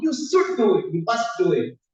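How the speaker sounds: firm, strong, disciplined teacher tone. Showing how the scriptures sometimes speak like a teacher, disciplined and strong. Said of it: "with a very disciplined, strong".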